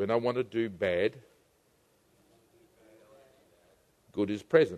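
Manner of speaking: very quiet, very low, hushed murmur. Leading a group to repeat a phrase, the speaker says it in a low voice. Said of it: "Say in a low voice".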